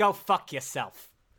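terrible put-on fake Boston accent. Delivering the punchline of a knock-knock joke, in a terrible boston accent. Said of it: "Here comes terrible Boston accent".

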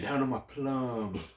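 very slow, drawn-out Southern drawl. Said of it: "he's trying to do, like, a southern accent".

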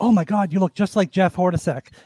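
ordinary talk

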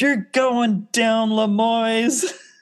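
acted, stretched-out, very high-pitched scream. Retelling what someone screamed out of a car window: retelling a scream. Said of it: "unrolls the window and screams".

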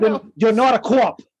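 put-on over-the-top Boston accent. Quoting a line from The Departed: over-the-top Boston accent. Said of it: "the most ridiculous, over-the-top Boston accents".

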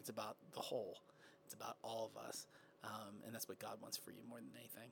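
very hushed, contemplative, quiet, low and quick. Speaking to listeners about life as a follower, ending the talk really quiet. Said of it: "You got really quiet though at the end".

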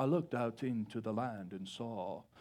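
low, hushed, serious, solemn English accent. Speaker acts out how Paul's writing sounds in movies, in a serious English accent. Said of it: "real serious and like this English accent".

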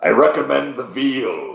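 hearty, high pirate yell, "veal" drawn out. Retelling yelling from a passing ride boat to restaurant diners, in a pirate voice. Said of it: "I'll usually yell out in a pirate voice".

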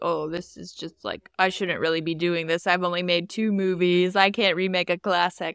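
ordinary talk, nothing marked

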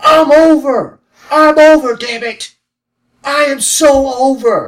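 put-on wrestler-style yell. Mocking a wrestler's promo that was just yelling nonsense: imitating the Miz yelling. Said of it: "It's the same thing".

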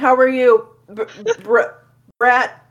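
very slow words spoken through a full mouth. Greeting a character mid-scene while still eating, talking with mouth full. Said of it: "Sorry, I'm choking".

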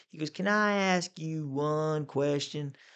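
put-on strong Southern accent. Retelling the chairman questioning Joe at a hearing: imitating Walter's deep Southern accent. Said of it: "Deep Southern accent".

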